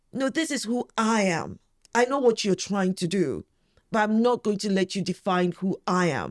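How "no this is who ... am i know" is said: usual speaking voice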